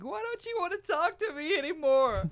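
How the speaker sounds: play-acted bawling, very high tearful sobbing wail. Retelling a woman sobbing on the phone in Walmart, imitating sobbing. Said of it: "bawling her eyes out, sobbing".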